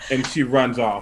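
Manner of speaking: ordinary delivery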